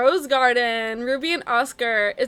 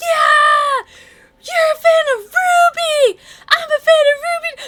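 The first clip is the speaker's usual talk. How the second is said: very high, very loud, thrilled, excited shouting; 9 dB louder than usual. Retelling how a guy came up to the car, imitating an excited yell. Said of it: "he's like yelling in excitement".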